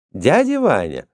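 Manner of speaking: cheerful outburst. A woman greets a man coming in from the snow, exclaiming cheerfully. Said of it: "весело воскликнула Фанни".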